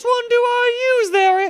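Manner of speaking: put-on very high-pitched, loud child's voice. Retelling a movie scene, imitating the kid's very high voice. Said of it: "this is what he sounds like".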